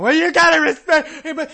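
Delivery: high, loud, whiny mocking voice.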